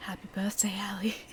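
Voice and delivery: eerie, unsettling, low, quiet creepy voice. Imagining a voice in a room you thought was empty: creepy low quiet voice. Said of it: "this really creepy, like low, quiet voice is saying".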